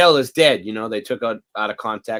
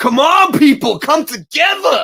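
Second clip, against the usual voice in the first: high, loud, slow, drawn-out exclamation; 7 dB louder than usual. Imitating how Rodney King used to sound: imitating Rodney King exclaiming. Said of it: "an exclamation".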